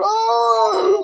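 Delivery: put-on very high, raspy, drawn-out scream of "oh". Retelling watching wrestling as a kid: imitating own childhood scream. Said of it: "and I'm screaming".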